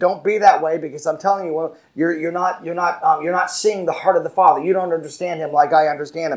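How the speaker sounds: ordinary delivery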